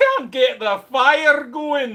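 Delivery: put-on very loud, high-pitched wee Scottish accent. Showing the silly voice used while working: wee scottish voice. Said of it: "I do my wee Scottish voice a lot".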